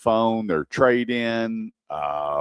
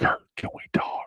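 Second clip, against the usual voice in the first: hushed, secretive whisper. Retelling a buddy calling back after things didn't go well, retelling a whisper. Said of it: "he's whispering".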